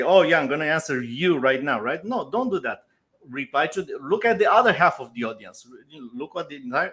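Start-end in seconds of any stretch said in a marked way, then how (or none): none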